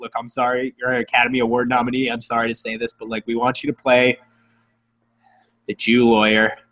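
heavy-sighed, hesitant, reluctant, sighing voice. Acting out a caller who sighs, then offers a role: reluctant sighing apology. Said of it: "you sigh, and you're like".

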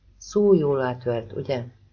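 plain

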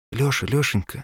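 frightened voice. A mother wakes her son Lyosha earlier than usual, frightened voice. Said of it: "говорила она испуганным голосом".

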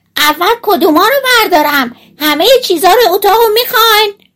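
piercing, very loud, shrill, high-pitched shout. Narrator reads a tiny boy calling into the priest's room again, in a very loud shout. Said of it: "با صدای خیلی بلند گفت".

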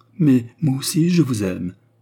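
cried out. Narrator reads Fernand's line to the woman, cried out. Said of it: "s'écria Fernand".

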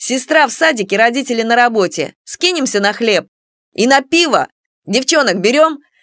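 ordinary delivery

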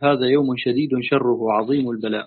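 ordinary delivery

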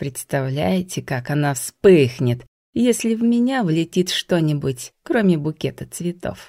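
plain

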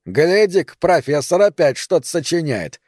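scornful, mocking, derisive taunting tone. A man snatching another's writing to make fun of him: mocking. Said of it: "с издевкой сказал Сандро".

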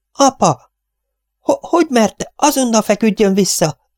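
very high-pitched, scared, frightened outcry. Narrator reads a daughter crying out to her father, frightened cry. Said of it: "ijedten felkiáltott".

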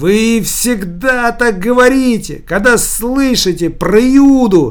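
sudden, high-pitched, loud shouting outburst. Geraskin, told he is pretending to be mad, answers back, shouting. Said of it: "Закричал Гераськин".

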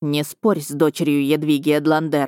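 ordinary delivery

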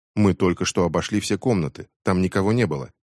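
ordinary talk

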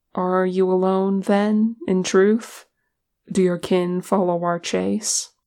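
plain

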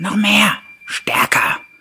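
very high, very loud bellowing roar. A narrator reads the ghost's demand to the father hanging on its leg, bellowing. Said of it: "brüllte der Geist".

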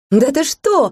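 high, glad, joyful, surprised cry. The narrator hears a little dragon's wedding invitation; joyful cry. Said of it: "вскрикнула я радостно".

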